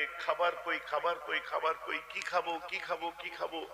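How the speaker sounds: ordinary talk, nothing marked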